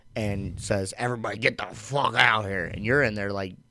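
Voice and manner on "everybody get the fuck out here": imitated pissed-off drunk sergeant. Retelling how a pissed-off drunk sergeant orders everyone out: imitating a pissed-off drunk sergeant. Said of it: "who's pissed off, comes back to the barracks drunk".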